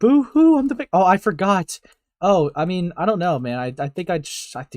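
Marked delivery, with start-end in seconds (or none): 0.0-0.9 mock very high, loud, bawling crybaby voice. Mocking the other speaker for crying during an argument: mocking someone crying. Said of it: "you're going".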